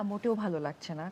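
sad, subdued, low, soft, heavy voice.

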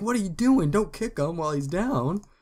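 acted out, very high, shrill, loud scolding scream. Retelling how onlookers react at street fights: imitating people screaming. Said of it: "they all scream at you, like".

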